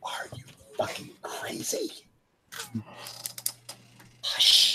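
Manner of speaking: silently mouthed words, barely-there breathy whisper. Narrating a scene, a character looks around and mouths the words silently. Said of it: "looks around and goes and mouths".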